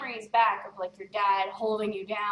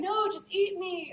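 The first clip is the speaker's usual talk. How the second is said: put-on crying voice, higher; 10 semitones higher than usual. Retelling an anime scene where a character begs while crying: imitating Eren crying.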